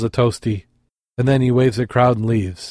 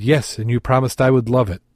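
ordinary delivery

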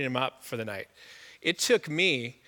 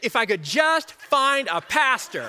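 very high, loud, drawn-out exasperation; 9 semitones higher, 6 dB louder than usual. Retelling what a man nearby kept saying loudly, imitating his exasperation. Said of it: "he's all exasperated".

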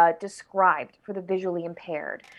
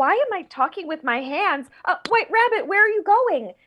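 higher-pitched put-on young girl character voice; 11 semitones higher than usual. Retelling voicing Alice on stage: Alice voice. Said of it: "as Alice, would say".

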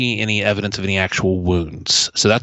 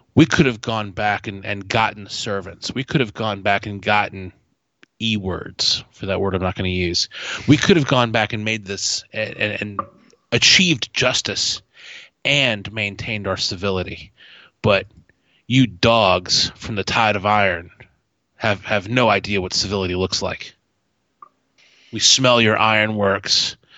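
ordinary talk

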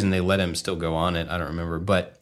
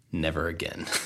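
mock completely serious, no joking at all; 2 semitones lower, 8 dB quieter than usual. Retelling a mother's reaction after a roller coaster: imitating mom, super serious. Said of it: "she's, like, super serious".

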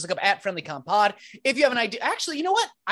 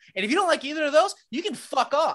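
hostile, aggressive, fast, pitched-up outburst; 5 semitones higher than usual. Wrapping up the show to listeners: aggressive. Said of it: "Being real aggressive in the outro here".

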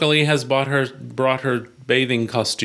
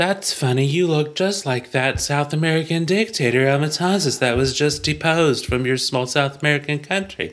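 put-on ditzy, clueless woman's airhead voice. Answering a lost stranger who found the camp, in a clueless female voice. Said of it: "I'm trying to do listeners' female voice. The clueless female".

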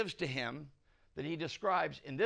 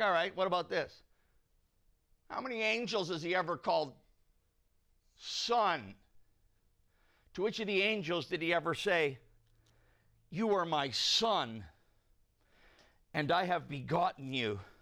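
acted-out irked, miffed, sarcastic tone. Retelling what an annoyed writer argued about the angels: imitating a miffed writer. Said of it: "pretty miffed".

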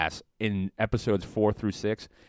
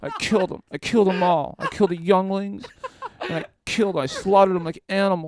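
whiny, pitched-up whine; 9 semitones higher than usual. Mocking how Anakin Skywalker acts in the movie: whiny Anakin Skywalker voice. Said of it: "He's like".

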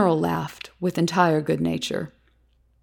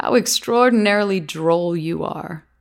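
plain

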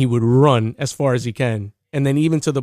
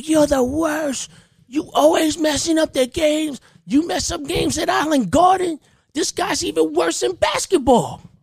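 very high, shrill, acted-out yelling. Retelling a parent yelling at the speaker during a kid's game, retelling a parent's yelling. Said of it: "this parent is just yelling at me".

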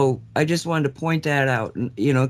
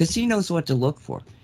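plain

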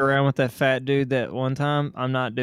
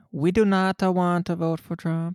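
high, mocking, put-on Californian accent; 5 semitones higher than usual. Speaker mimicking how people from California talk, mocking Californian voice. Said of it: "the Californian quote voice".

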